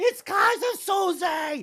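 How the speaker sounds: mock shrill, very high terrified scream, word drawn out. Describing the suspect hiding in the bottom of the ship, retelling a terrified scream. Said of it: "the bottom of the ship screaming".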